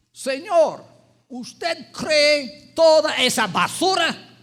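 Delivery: outraged angry yell, high-pitched and loud. Retelling how a lady reacted to hearing of the seminary: imitating someone yelling. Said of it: "y gritando".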